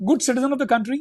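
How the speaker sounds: ordinary talk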